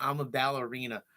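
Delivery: ordinary delivery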